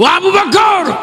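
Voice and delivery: impassioned, shouting cry in a preacher's style.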